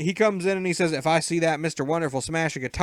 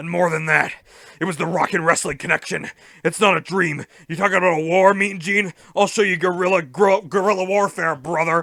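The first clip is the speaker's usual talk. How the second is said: loud, bellowing wrestling-promo style, stumbling over words; 5 dB louder than usual. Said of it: "He stutters like that".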